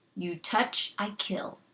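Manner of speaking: savage, fierce growling voice. Reading a story aloud, the tiny Indian threatens the boy, fierce growl. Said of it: "the Indian growled fiercely".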